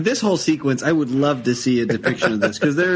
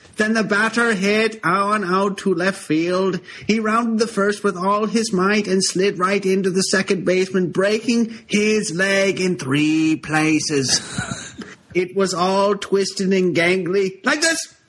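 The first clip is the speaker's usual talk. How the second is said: put-on Irish-Boston hybrid accent, higher; 5 semitones higher than usual. A woman recounting a batter's slide and injury, in an Irish-Boston hybrid accent. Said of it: "An earnest woman stands behind the podium. ... You sound like an Irish immigrant woman. That's what he's doing. He's doing kind of Irish a Boston, kind of a Irish Boston hybrid".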